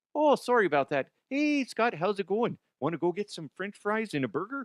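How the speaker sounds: imitated Canadian accent. Imitating a hockey player who grew up in california: imitating a canadian accent. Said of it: "a slight Canadian accent".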